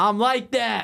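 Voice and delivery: put-on cocky, swaggering, full-of-himself voice, pitched very high. Retelling what a cocky guy said back to him; imitating a cocky guy.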